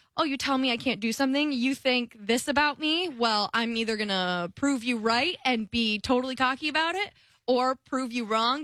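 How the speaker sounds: usual speaking voice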